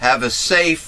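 safe drawn out slow with heavy stress.

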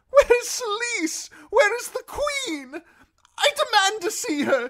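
very high, loud, shrill, terrified voice. A prisoner being dragged away by guardsmen, fearful. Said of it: "face twisted in fear".

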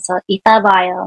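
flat, level, toneless monotone with no rise. Teaching a Korean farewell, demonstrating it in a monotone. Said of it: "try it with a monotone".

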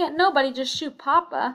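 greatly agitated, very upset, high and loud. A child presses with a follow-up question, greatly agitated. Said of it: "greatly agitated".

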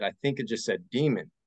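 ordinary delivery

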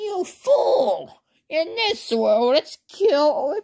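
very high-pitched, angry voice. Retelling a story where Flowey tricks Deku, in Flowey impression. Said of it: "my impersonation of Flowey".

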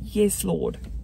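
ordinary talk

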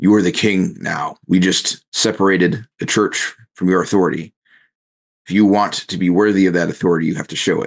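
authoritative, firm, commanding voice. Grabbing the king's shoulder, a player's character speaks to him in a booming voice. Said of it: "you use your booming voice at this point".

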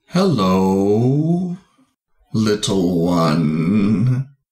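put-on tree voice, speaking slowly. Voicing an awakened giant tree greeting its tiny creator: speaking slowly as a tree.

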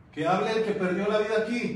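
loud, high-pitched calling out.

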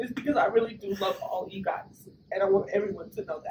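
tearful. Telling the whole group she will miss them, crying. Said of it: "and that's why I'm crying".

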